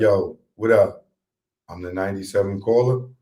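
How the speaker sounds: dead, deadpan, flat and lifeless voice. Acting out a radio contest caller: imitating a caller who sounds dead.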